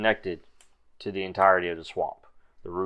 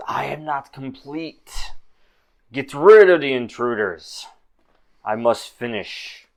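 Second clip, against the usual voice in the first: layered doubled voice, slow, raised, drawn out; 6 semitones higher, 8 dB louder than usual. Recounting a game scene, voicing the encased figure, dual voice. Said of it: "You hear the dual voice come back and says".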